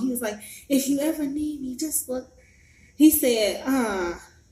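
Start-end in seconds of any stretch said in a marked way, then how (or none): 0.7-2.3 lightly called out, mild and pitched up. Retelling what he said after being given a five: imitating someone saying it loudly. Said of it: "he said it real loud too".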